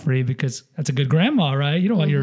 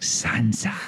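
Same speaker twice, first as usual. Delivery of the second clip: soft breathy whisper; 3 semitones lower, 4 dB quieter than usual. Imitating a favorite character's voice for another speaker: Littlefinger voice. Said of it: "that kind of voice he has".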